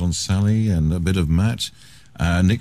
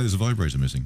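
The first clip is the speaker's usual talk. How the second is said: plain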